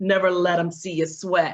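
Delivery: ordinary talk, nothing marked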